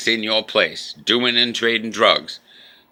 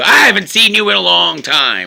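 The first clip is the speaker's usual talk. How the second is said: put-on high, swooping talk through laughter; 9 semitones higher, 6 dB louder than usual. Retelling how Marjorie came in: imitating Marjorie laughing. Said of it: "laughing her asses".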